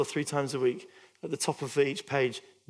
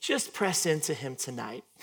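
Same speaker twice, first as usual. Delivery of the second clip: put-on very strong, thick American accent. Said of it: "she goes in a very American voice".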